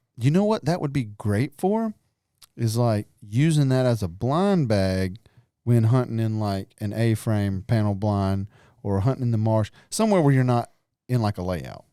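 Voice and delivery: ordinary talk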